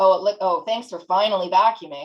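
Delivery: snarky, sarcastic, backhanded, passive-aggressive tone. Demonstrating a snarky thank-you: sarcastic, passive-aggressive. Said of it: "it's all about how you you say".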